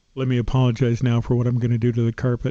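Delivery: muttering under breath. Retelling what is said when signing into a hotel: muttering under breath. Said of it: "I mutter under my breath".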